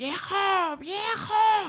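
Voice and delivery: acted high-pitched yell. Retelling a story, acting out someone stuck calling her husband: imitating someone yelling. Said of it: "Y empieza a gritar".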